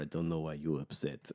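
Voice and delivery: put-on Russian accent. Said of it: "all of the bartenders have really thick Russian accents".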